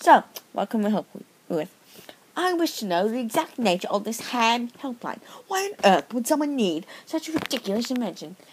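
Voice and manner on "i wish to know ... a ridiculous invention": bad, fake, put-on British accent. A caller questions the ham helpline staff, in a bad British accent. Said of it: "you sound like an Australian man with a bad British accent".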